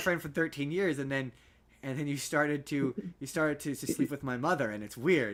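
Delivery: ordinary talk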